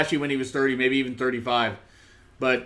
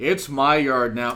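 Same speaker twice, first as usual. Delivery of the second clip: bored put-on wrestler voice; 3 dB louder than usual. Quoting a line that a wrestler delivered: bored Roman Reigns impression. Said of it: "Reigns sounded bored".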